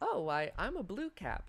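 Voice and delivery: tiny high creature voice, very slow and drawn out. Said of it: "a small voice begins to speak to you".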